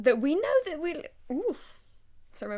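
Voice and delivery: voice breaking mid-phrase, jumping high. Discussing a character's first scene with a co-host, voice cracking. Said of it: "my voice just broke".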